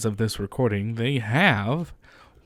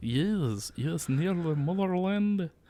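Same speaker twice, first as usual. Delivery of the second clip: clumsy put-on Russian accent, pitched up; 7 semitones higher, 6 dB quieter than usual. Joking with another speaker about Zelensky: bad fake Russian accent. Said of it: "That's a terrible, I can't do Russian".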